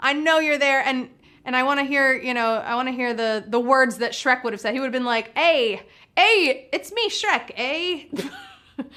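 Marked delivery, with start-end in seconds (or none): 5.4-8.8 very slow, drawn-out, sing-song put-on Canadian accent. Imagining how a cartoon ogre would have sounded: Shrek with a Canadian accent. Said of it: "with my Canadian accent".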